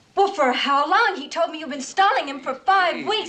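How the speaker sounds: heated, angry, high-pitched shouting. A wife confronts her husband about an offer he kept from her, shouting angrily. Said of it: "please stop shouting".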